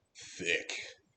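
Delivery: deep, very quiet lumberjack voice. Showing how the word should be said: dropped, deeper voice on 'thick'. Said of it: "I feel like you gotta drop your voice when you say it though".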